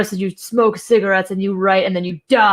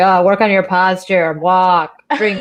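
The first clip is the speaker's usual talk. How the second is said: dead flat monotone. Quoting advice from a writing master class: monotone Margaret Atwood impression. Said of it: "in her very, like, uh, monotone Atwood way".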